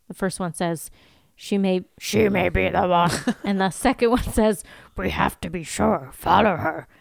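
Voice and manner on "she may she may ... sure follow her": put-on little alien voice. Retelling a scene where one demon speaks to another: Yoda voice. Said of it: "I kinda went Yoda, I think".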